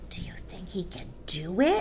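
soft, hushed, secretive whisper. Watching a boy eat an enormous cake, she asks a fellow watcher, whispered. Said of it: "she whispered to Lavender".

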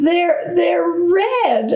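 very high, stunned stutter, "red" drawn out. Narrator reads their own line as laughter fills the room, stammering in disbelief. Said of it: "I stammered in disbelief".

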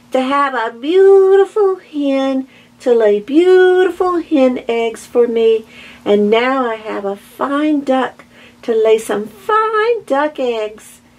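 high, happy, delighted crying out. The half-blind old lady takes the oversized duckling for a duck, crying out. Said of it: "she cried".

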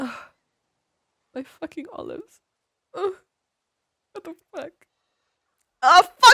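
loud, high, full-volume fake sobbing. Joking about a breakdown over olives, after promising to pretend: mock crying. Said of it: "I'm crying!".

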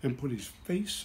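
ordinary delivery

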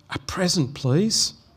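hushed, soft little whisper. A little girl asked what she wants for Christmas answers, whispering. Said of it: "she licked her lips and whispered".

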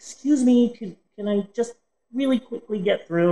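softened voice. Retelling asking strangers to let her through, in her softened voice. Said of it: "I just try and soften it".

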